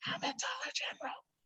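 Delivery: very quiet, hushed, breathy whisper. Retelling how her mom says where she's shopping, imitating her mom whispering. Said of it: "she'll whisper".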